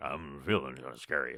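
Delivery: deep voice dropped by an octave. Describing how the player's changed form now sounds: imitating a voice an octave deeper. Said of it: "Your voice is actually deeper, uh, by an octave".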